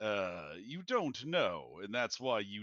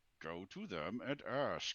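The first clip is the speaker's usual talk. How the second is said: through gritted teeth, much quieter; 4 dB quieter than usual. A character, tired of his people being treated as line items, answers through gritted teeth. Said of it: "says through gritted teeth".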